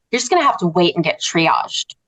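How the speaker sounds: mock snippy, huffy, put-out, nasty tone. Recounting an ER worker's reply to her request, imitating a huffy, nasty tone. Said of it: "And sort of this really kind of nasty tone".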